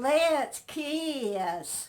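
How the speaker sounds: rustic country drawl. Retelling a first kiss outside a friend's house: Joe's old country hick voice. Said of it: "him and his old country hick voice".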